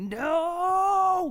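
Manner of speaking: mock very high, shattering, drawn-out cry of anguish. Retelling the movie moment where he kills Zod: imitating a death-shattering scream. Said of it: "that death shattering, like".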